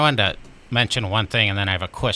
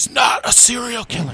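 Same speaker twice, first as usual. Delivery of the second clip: acted shrill, high-pitched yell; 13 semitones higher than usual. Retelling watching a documentary: imitating yelling at the TV. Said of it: "yelling at the T V".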